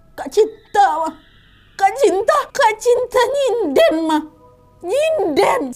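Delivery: slow, quavering, trembling, frightened voice. Narrating a story, [name] points toward her sister's room, trembling voice. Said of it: "dengan suara bergetar".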